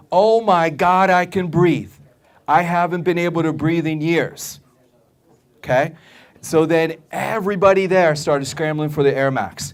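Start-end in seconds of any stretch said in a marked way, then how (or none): 0.1-4.6 woman crying out all at once, sudden screamed outburst. Retelling how a skeptical woman suddenly screams out: imitating a woman screaming out. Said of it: "she just screams out".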